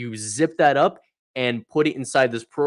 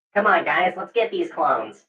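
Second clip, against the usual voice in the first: robotic droid voice, higher; 6 semitones higher than usual. Showing the other speakers a Star Wars Battlefront droid voice. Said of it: "experimenting with the droid voice, uh, from the, um, from Star Wars, uh, Battlefront".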